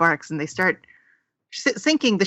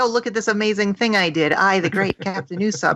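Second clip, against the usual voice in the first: plain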